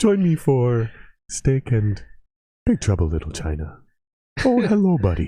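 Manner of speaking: mild, gentle voice. Imitating a favorite TikTok creator for a friend, imitating someone talking really softly. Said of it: "he talks really softly".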